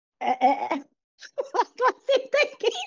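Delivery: laughing through the words. Forgetting the podcast intro line partway through, laughing while talking. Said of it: "no more laughing gas for J R".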